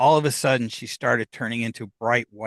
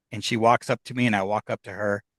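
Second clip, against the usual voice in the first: usual speaking voice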